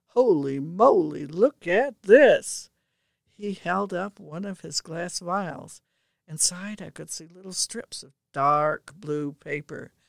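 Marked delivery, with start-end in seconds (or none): 0.2-2.7 very loud, drawn-out, rising exclamation of surprise. Dave, in the middle of his usual analysis, suddenly spots something; exclaimed. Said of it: "he exclaimed".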